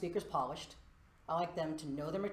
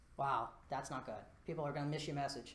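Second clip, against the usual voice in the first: ordinary talk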